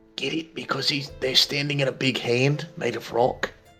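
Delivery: hushed half-whisper, spoken aside. Half-whispering a joke to Ares during a tense scene: half-whispering. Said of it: "turn to Ares and whisper".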